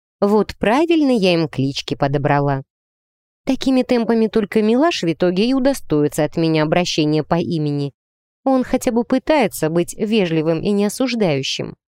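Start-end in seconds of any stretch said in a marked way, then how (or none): none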